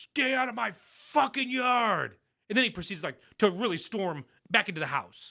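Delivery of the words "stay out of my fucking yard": mock, high, very slow, spaced-out furious holler. Speaker retells what a man shouted at them about his yard, retelling a yell. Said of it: "yells something like".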